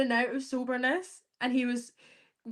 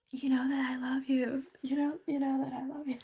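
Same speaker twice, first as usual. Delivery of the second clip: mock whisper, quieter; 4 dB quieter than usual. Imitating a man from a show who always whispers: imitating someone whispering. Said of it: "He always whispers".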